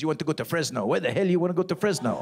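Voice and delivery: snippy, fed-up, irritated put-on French accent. Speaker retelling switching phone GPS voices, imitating the pissy French one. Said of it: "He was all pissy".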